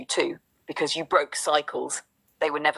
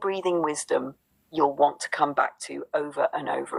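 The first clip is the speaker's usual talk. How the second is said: normal talking voice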